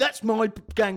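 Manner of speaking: irritation barely kept down, annoyance held in. Imitating a jogger claiming his spot: imitating suppressed annoyance. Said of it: "suppressed annoyance in his voice".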